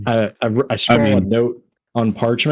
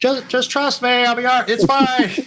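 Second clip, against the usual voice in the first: distant, very high-pitched, far-off carrying voice; 13 semitones higher than usual. Speaking in character to others indoors: sounding far away, from the courtyard. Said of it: "trying to sound like I'm in the courtyard".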